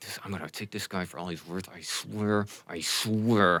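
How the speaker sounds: muttering under breath. A game narrator voices a character arranging spell components, muttering under his breath. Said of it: "he's muttering under his breath".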